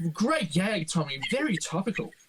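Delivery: offhand, tossed-off side remark. Quoting the narrator's little asides from the section: imitating Tony Martin's narrating asides. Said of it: "doing all those little asides".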